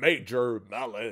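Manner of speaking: needlessly big, slow, dramatic announcer voice. Naming a product spotted among upcoming products: big voice for no reason. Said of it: "grosse voix pour rien".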